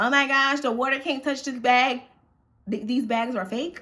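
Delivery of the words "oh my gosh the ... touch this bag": whiny, near tears, crying fuss. Retelling how a woman fussed over her bag: imitating someone whining. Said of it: "crying and whining".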